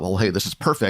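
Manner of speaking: plain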